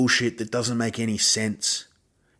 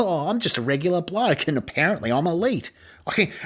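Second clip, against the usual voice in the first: light, jokey delivery, pitched up high; 6 semitones higher than usual. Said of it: "he's acting like that's funny".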